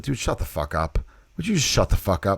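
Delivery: playful, easygoing, soft friendly teasing, no edge. Practicing how to say a line without anger behind it, friendly, not angry. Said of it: "don't say it like you're gonna punch him, but more like this".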